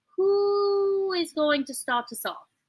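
put-on British accent, stretched who. Running a 30-second auction, asking who will bid first, british accent. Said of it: "I don't know why you went British".

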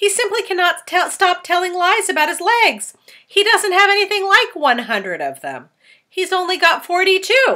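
very high, very loud, shrill complaining cry. The earthworm, speaking for the first time, cries out about the centipede. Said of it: "the earthworm cried".

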